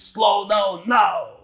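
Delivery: acted shouting. Retelling a voice warning a driver, re-enacting the voice shouting. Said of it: "this voice started shouting".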